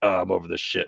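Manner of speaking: put-on super gruff, throaty character voice. A player pitches a voice idea for a game character, performing it in a gruff, throaty voice. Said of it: "he's like super just like gruff".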